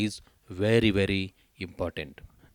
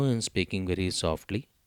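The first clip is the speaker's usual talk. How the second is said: ordinary delivery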